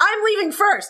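put-on very high, sudden yelled outburst. Retelling how a date jumped up and yelled before running out of the bar: retelling a yell. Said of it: "jumps up and yells".

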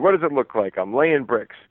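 acted short, surly, terse delivery with attitude. Retelling a story of a worker answering tourists: imitating a terse, bad-attitude reply. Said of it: "in a very, uh, terse tone, with a bad attitude".

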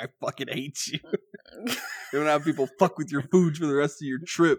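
low grumbled rant, held back from yelling. Retelling a favorite movie scene, imitating Jonah Hill muttering under his breath. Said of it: "under his breath".

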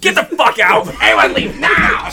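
put-on angry outburst. Imitating someone ending the podcast by flipping the table: imitating someone flipping out. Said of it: "him just flipping the table".

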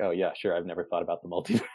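dry, heavily sarcastic, dismissive tone. Retelling how he answered a woman's question, imitating his sarcasm. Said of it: "he sarcastically's like".

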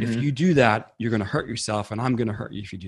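put-on mock-bullying voice. Describing their inner protector, the speaker acts it out in a mock-bullying voice. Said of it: "a little more like a bully".

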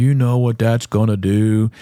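put-on whiny donkey voice. Retelling his own complaint about a project in a whiny Eeyore voice. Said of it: "I'm like Eeyore".

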